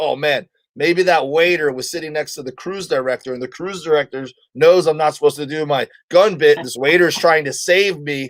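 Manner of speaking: ordinary talk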